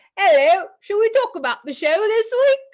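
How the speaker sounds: very bad fake English accent, loud and high. Starting the talk about this week's show, in a bad english accent. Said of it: "that's the worst English accent ever".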